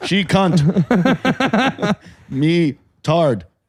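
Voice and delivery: broken caveman speech, very slow. Mocking a friend's phrasing by talking like a caveman: mock caveman talk. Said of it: "you can't talk like a caveman".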